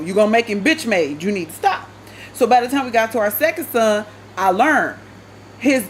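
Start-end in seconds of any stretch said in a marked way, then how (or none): none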